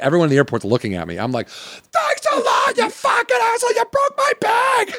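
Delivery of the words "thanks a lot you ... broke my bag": shrill, very high, furious screaming. Speaker reenacts yelling at a man in the airport over a broken bag: reenacting own yelling. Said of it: "I'm yelling".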